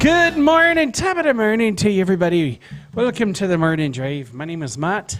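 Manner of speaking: put-on Irish accent, mock brogue. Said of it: "the Irish?".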